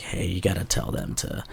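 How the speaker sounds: very soft whisper.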